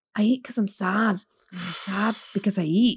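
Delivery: put-on Scottish accent. Describing Mike Myers' film roles, quoting a character: Fat Bastard voice. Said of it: "a massively overweight Scottish guy".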